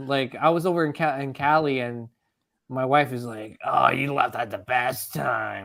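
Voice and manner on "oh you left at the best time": put-on voice of an older, elderly woman. Retelling what the wife said about leaving: older lady from Monsters, Inc. voice. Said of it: "Sounds like the older lady from, uh, Monsters, Inc".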